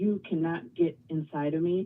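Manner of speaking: play-acted very angry, defiant, forceful delivery. Retelling pointing at the mirror in a dream state: imitating own angry words. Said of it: "said it very angrily".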